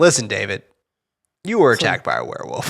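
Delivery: mock breezy, upbeat, extremely chipper swooping sing-song. Retelling how Jack tells David the truth: imitating Jack, extremely chipper. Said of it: "he's extremely chipper".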